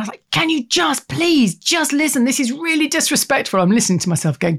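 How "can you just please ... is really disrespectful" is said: acted, worn-out exasperated snap, pitched up. Parent recounting a bedtime when the kids weren't listening, retelling snapping at them. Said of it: "and I snapped".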